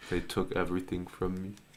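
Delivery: very quiet, hopeless, deeply depressed voice. Asked to do an impression of a deeply depressed person; very depressed voice. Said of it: "do an impression of a really super fucking depressed person".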